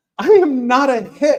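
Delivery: loud, high-pitched indignation.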